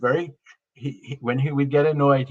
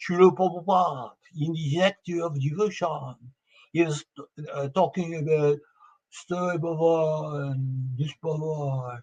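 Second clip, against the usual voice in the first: put-on thick French accent, slow, "Baba" drawn out; 3 semitones higher than usual. Imitating a devotee asking a question in class: heavy French accent. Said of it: "He had a very heavy French accent".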